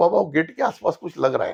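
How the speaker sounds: ordinary talk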